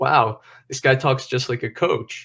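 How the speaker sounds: ordinary talk, nothing marked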